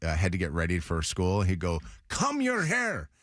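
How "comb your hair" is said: put-on high-pitched Spanish accent. Recalling dad telling the kids to get ready for school, imitating dad's Spanish accent. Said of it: "my dad having a Spanish accent".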